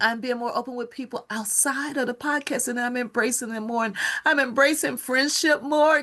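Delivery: very high voice, laughing and crying at once. Speaker opens up to podcast listeners about people, laughing and crying. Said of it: "I am laughing and crying".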